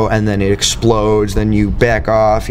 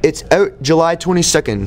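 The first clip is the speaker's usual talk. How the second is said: put-on Canadian accent; 7 semitones higher than usual. Asked to do it now, speaker announces a release date in a Canadian accent. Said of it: "That was my Canadian voice".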